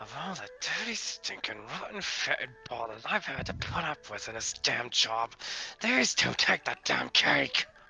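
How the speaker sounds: angry muttering, growled under breath. Voicing a character grumbling about two companions: muttering angrily under breath. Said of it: "he's just muttering to himself".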